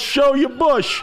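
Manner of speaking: put-on, acted yelling. Retelling how their dad yelled from the last row into a silent audience, retelling a yell. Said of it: "He yells".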